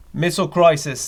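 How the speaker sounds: put-on Australian accent. Switching accents mid-bit, the speaker now goes australian: put-on australian accent. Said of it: "Now I'm going Australian".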